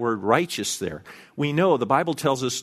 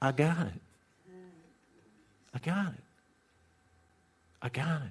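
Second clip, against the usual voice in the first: gentle, sweet, almost sleepy, very soft hush; 4 semitones higher, 10 dB quieter than usual. Voicing God's reply to our panic and quaking, God's sweet, sleepy voice. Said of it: "in a sweet, almost sleepy voice".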